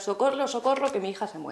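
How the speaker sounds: ordinary delivery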